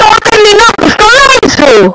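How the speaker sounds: loud, teasing, mocking voice.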